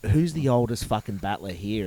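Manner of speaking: normal talking voice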